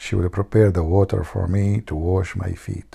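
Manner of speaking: confiding, hushed stage half-whisper. Retelling a husband telling his guest something: imitating a half-whisper.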